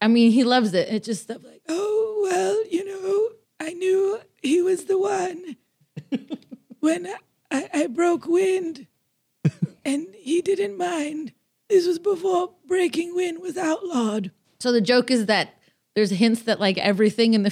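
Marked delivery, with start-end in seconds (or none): 1.7-14.3 put-on very high, slow old lady voice. Explaining a joke voice used about their relationship, in an old lady voice. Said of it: "doing an old lady voice".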